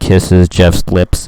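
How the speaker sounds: mock swooning schoolgirl voice, low, slow, loud.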